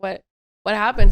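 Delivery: panicked and alarmed voice. Retelling asking a crying sister what happened: retelling own panicked question. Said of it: "'Cause now I'm panicking".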